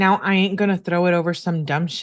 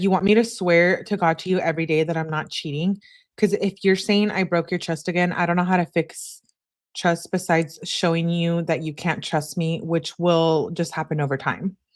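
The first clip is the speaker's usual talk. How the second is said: ordinary talk, nothing marked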